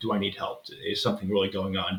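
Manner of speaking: ordinary delivery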